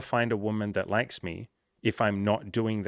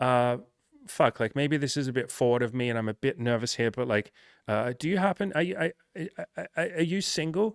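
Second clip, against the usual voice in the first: acted jittery, stumbling nervous stammer, rising in pitch; 4 semitones higher than usual. Acting out a shy guy asking a woman out: acting out a nervous ask. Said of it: "to say to a couple of women really nervously".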